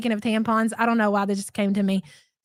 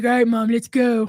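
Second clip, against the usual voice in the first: put-on, imitated deep low voice. Retelling what her son said at pickup, imitating his deep voice. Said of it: "With his deep voice and everything".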